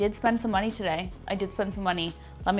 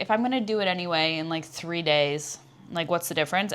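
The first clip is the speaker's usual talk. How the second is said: ordinary talk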